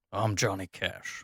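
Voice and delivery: very quiet, hushed, soft put-on character voice. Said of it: "thank you for introducing yourself so quickly".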